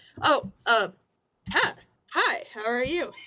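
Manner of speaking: brightening, perked-up, keen, eager tone. Narrator plays a merchant who notices the player approaching: perking up. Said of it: "and then he sort of perks up".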